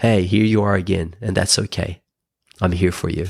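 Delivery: loving, gentle inner voice. Retelling how the inner voice later spoke to them: imitating a loving inner voice. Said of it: "became a loving voice".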